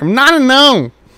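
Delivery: shrill, very high, very loud shouted halfling squeal. Player trying out a voice for a halfling character, high-pitched halfling voice. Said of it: "I need to work on my halfling voice".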